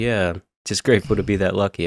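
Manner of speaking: mock sarcastic tone. Retelling a clan member's reply to bad luck: imitating a sarcastic reply.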